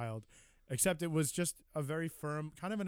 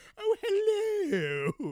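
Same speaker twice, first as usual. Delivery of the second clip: put-on very high, loud, shrill, sing-song, swooping old British lady voice; 8 dB louder than usual. Joking about newborns greeting the world: old British lady voice. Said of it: "Like an old, old British lady".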